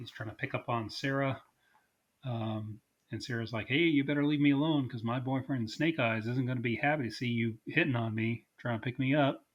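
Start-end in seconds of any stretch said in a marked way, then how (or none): none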